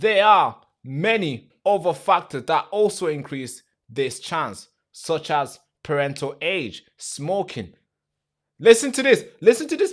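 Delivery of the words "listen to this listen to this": loud, emphatic, very high raised voice. Urging listeners to pay attention while disputing an argument, raised voice. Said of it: "the reason why I'm raising my voice".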